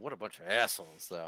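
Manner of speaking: low muttering under the breath. Getting out of the car after a meeting: muttering under breath. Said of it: "I'll mutter under my breath".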